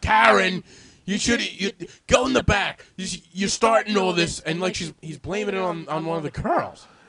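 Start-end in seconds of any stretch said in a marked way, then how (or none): 0.0-4.4 put-on yelling, higher and louder. Retelling how a man blamed one of the girls: imitating someone yelling. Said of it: "he starts yelling at".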